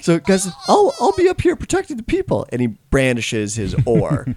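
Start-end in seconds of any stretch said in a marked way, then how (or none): 0.0-2.4 voice pushed very high, squeaky, pitch climbing. A game narrator speaks as Greg to the group, in Greg's higher-pitched voice. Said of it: "I think he was just a higher pitched voice".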